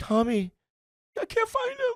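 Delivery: very high, swooping, sobbing tearful voice. Retelling telling parents the cat is missing: imitating his own past crying. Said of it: "crying to my parents".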